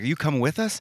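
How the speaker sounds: high, loud yell calling out. Retelling calling to a friend across the street: imitating own yell. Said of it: "And I'm yelling across the thing".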